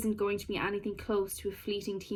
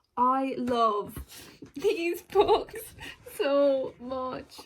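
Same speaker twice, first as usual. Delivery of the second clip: very slow, high, teary, halting, choked-up voice; 5 semitones higher, 4 dB louder than usual. Talking about favorite books, on the verge of tears.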